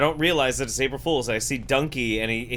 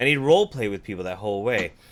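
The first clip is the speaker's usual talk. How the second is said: plain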